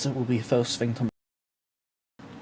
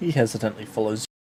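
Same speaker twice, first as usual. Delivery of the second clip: plain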